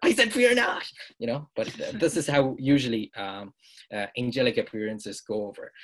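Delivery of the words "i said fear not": very high, loud, frantic screaming. Retelling angels repeating their greeting to frightened humans: imitating a louder scream. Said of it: "everyone just screams louder".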